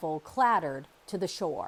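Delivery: ordinary delivery, nothing marked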